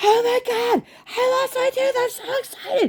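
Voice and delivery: mock very high, drawn-out, thrilled, gushing excitement. Retelling a kid's reaction to losing a tooth: imitating excited freaking out. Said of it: "And she's freaking out".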